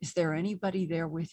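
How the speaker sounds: put-on soft voice. Retelling how the doctor asked the woman under hypnosis: imitating a quiet question.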